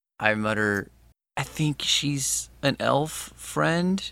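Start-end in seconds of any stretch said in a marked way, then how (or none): 3.4-4.0 heavy, loaded stress on the word friend. Answering a whispered question of who she is, with emphasis on "friend". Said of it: "I put an emphasis on the word friend".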